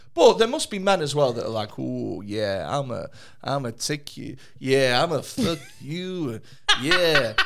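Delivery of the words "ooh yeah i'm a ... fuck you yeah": put-on overconfident sex voice, much slower. Imitating overconfident men in bed: mock Dunning-Kruger sex voice. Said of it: "What the fuck is that voice?".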